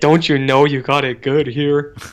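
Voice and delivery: cartoon sitcom dad voice. Talking about an ungrateful kid, the speaker busts out a Mike Judge dad voice. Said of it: "Busting out the Mike Judge dad voice".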